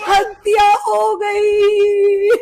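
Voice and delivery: slow, sobbing, crying wail.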